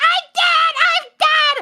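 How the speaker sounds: very high, stretched-out, drawn-out panicked cry. Tank player retelling what they said to their healers when hit, imitating a panicked cry. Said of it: "by a mechanic and be like".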